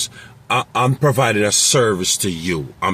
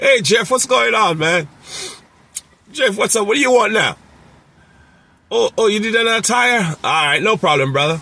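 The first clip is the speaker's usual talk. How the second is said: very high, loose, friendly, casual buddy-buddy tone; 12 semitones higher than usual. Showing how to greet a repeat customer, the speaker uses a friendly, personal tone. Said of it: "more personal and friendly".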